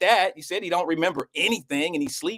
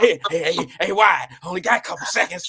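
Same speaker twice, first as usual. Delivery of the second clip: put-on whisper. Teasing sis about how she whispers when she talks: imitating someone whispering. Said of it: "You be whispering when you try to talk".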